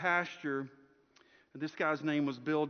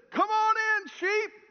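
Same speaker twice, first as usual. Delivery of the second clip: acted-out, high-pitched, big-winded, booming preacher holler; 6 dB louder than usual. Retelling how Bill called to the sheep: Bill's big booming preacher voice. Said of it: "mustered up a big wind and voice".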